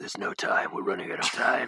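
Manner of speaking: put-on gruff, very husky, gravelly action-hero voice. Mocking british actors attempting american accents: super husky gruff voice. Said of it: "or like super husky".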